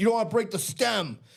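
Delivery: mock-stern put-on voice. Retelling brother-in-law Nate talking to nephew Will, imitating Nate talking sternly. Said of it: "not yelling, but talking sternly".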